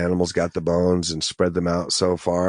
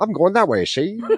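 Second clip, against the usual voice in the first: put-on very high, old-timey newsboy street patter voice; 13 semitones higher, 4 dB louder than usual. Teasing the other speaker who just sounded like a newsie, in an old-timey newsie voice. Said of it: "Why do you sound like a newsie just then?".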